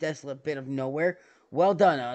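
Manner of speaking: ordinary delivery, nothing marked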